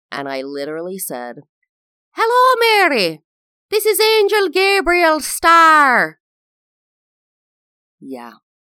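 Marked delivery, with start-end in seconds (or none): 2.1-6.2 put-on very high, very loud Irish accent. Retelling own first line as a star in a childhood play: imitating own past irish accent. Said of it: "had taken on the Irish accent".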